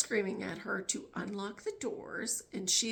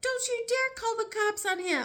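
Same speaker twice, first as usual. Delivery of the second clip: put-on very high-pitched, shrill, loud screaming; 14 semitones higher, 5 dB louder than usual. Telling a date story, speaker quotes a woman at her brother: imitating someone screaming. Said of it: "she's screaming at him".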